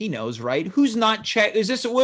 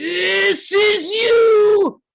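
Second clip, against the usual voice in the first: high, loud, slow Australian shout. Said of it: "this Australian guy's friend sound-".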